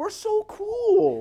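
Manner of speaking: high, slow, drawn-out, smug mock boast.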